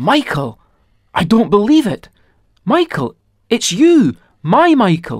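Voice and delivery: high, loud, gasping, astonished disbelief.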